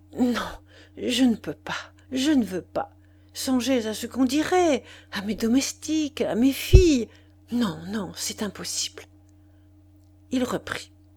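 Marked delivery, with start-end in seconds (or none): 0.1-9.0 breathless panting, much higher pitch. A woman answers a man pleading to come see her, panting. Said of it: "elle répondit en haletant".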